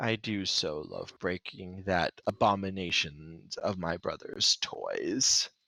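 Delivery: low, deep, put-on bad-guy character voice. A player shows how the character's line would sound, in a deeper character voice. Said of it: "you would hear the deeper voice go".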